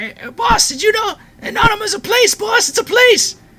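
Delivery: very high-pitched, loud demonic voice. Voicing a demon speaking up to the boss; high-pitched demonic voice. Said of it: "this high pitched demonic voice just speak out".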